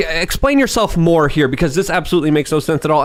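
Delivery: ordinary delivery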